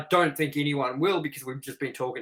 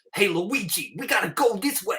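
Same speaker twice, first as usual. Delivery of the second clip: raised-pitch New York accent; 6 semitones higher than usual. Imagining a new Mario who doesn't sound like Mario, calling to Luigi: New York accent as Mario. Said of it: "from New York fucking city".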